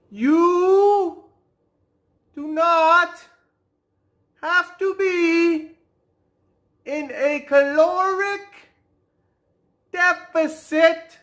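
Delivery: very slow, halting, broken-up delivery. Addressing the PhDs who can't wrap their heads around it, very slow. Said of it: "let me say this real slow for you guys".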